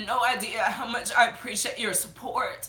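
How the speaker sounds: teary, crying voice. Speaker thanks the viewers of their video for their support, crying. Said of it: "retitle this video Crybaby".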